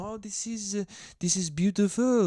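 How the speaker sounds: bad put-on French accent. Imitating european tourists visiting new york, in a bad put-on french accent. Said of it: "This is a French accent, by the way".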